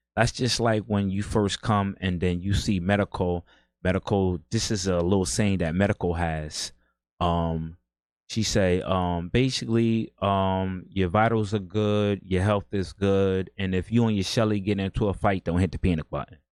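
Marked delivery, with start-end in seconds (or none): none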